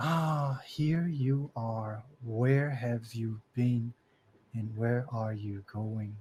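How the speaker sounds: very slow, layered, many-voiced chorus. Narrating a scene to the listener, a familiar voice addresses them: Samantha's voice, five speaking at once. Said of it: "a very familiar voice that sounds like five people talking at the same time".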